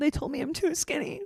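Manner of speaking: put-on upset, tearful girl voice, soft and high. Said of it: "this one girl came out crying".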